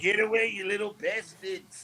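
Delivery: slow, drawn-out put-on voice. Retelling shooing kids away on a bus: Stu Hart impression. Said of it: "that was the voice I was using around kids".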